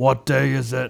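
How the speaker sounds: soft, very slow, creaky, rough-edged drawl. Imitating a friend's reply during a retold morning exchange: Dave impression. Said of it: "That's my Dave impression".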